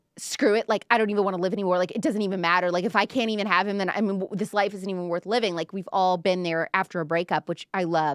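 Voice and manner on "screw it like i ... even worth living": ordinary talk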